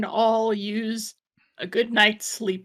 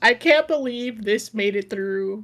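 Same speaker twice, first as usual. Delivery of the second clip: normal talking voice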